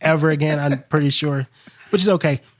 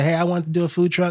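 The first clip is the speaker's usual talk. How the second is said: normal talking voice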